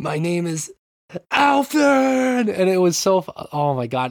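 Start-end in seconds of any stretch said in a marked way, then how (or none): 0.0-2.5 very high, drawn-out, dramatic delivery. Retelling a game's reveal scene: imitating Alfred's over-dramatic reveal. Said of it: "level of emphasis and ridiculousness".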